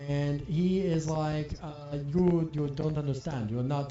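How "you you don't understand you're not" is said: flat, stiff robotic monotone. Retelling a character's words in a story, talking like the Terminator. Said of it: "Why am I talking like the Terminator?".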